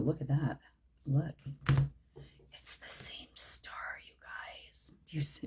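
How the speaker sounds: thrilled, eager, hushed whisper. Pointing out the same star to viewers: excited whisper. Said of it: "I whispered 'cause I whisper when I get excited".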